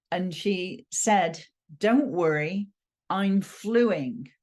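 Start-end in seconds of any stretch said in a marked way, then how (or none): 1.8-4.2 put-on American accent, laid on, slow and drawn-out. Retelling what a woman with a cold said, in an american accent. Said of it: "in this amazing American accent".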